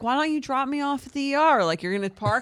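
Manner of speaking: complaining, scolding yell. Retelling yelling at him for parking at the hospital: retelling a yell. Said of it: "So I'm like yelling at him".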